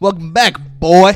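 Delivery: smug, superior, cocky and arrogant tone. Retelling a movie scene, imitating a cocky arrogant deputy. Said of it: "cocky, arrogant".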